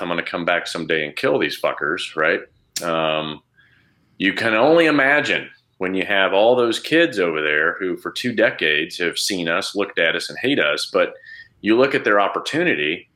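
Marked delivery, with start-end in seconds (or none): 0.0-2.1 put-on whisper muttered under breath. Imagining growing up as one of those kids: imitating a whisper under breath. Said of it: "I'd whisper under my breath".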